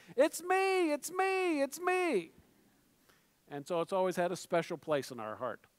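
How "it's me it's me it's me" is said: high-pitched mock toddler yell. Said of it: "she kept yelling".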